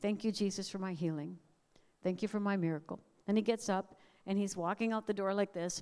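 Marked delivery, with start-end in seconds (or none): 0.0-3.0 mild, humble, gentle, meek voice. Retelling a boy's prayer for healing: imitating a gentle, meek voice. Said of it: "in his very gentle, meek way".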